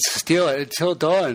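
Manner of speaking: speaking through a yawn. Speaking to a co-host while recording an episode, yawning. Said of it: "sorry, I'm yawning".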